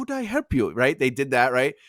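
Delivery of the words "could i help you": very high put-on Chinese accent. Retelling a restaurant scene from a show: imitating a stereotyped chinese accent. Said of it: "the accent the character used was like".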